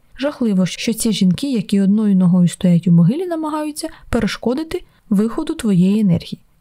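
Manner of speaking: ordinary delivery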